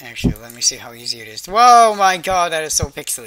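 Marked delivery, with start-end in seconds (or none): 1.4-3.3 loud shouting directly into the microphone. Streamer reacts while assigning staff in a game, yelling into the mic. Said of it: "Sorry for yelling into the mic".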